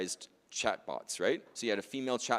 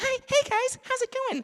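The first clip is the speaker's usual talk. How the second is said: very high, very loud squeaky cartoon voice; 8 dB louder than usual. A presenter showing how a voice agent might sound, in a Mickey Mouse voice. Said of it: "I'm like Mickey Mouse".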